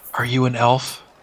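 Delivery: hushed whisper. Game master, as a character in a quiet alley, asks Kaylin something; whispering in her ear. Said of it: "just kind of whispers in her ear".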